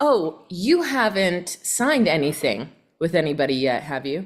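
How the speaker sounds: slow, skeptical, unconvinced doubting tone. Scripting a reply to someone who already has a realtor, skeptical, doubtful tone. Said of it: "In that voice of skepticism".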